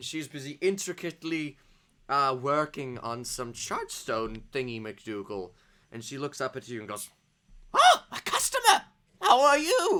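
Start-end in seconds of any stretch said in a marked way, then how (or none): 7.7-10.0 put-on very high, very loud old woman voice. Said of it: "you see a very old woman".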